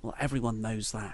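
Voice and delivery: put-on quiet mutter. Recounting Natalia's reply to Nia in a WWE segment, mimicking Natalia muttering under her breath. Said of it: "under her breath".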